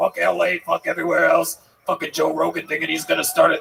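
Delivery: roughened, creaking voice. Imitating New York comics talking about other cities: sounding like Joey Diaz. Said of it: "I don't know why I sound like Joey Diaz".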